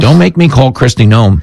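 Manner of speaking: ordinary talk, nothing marked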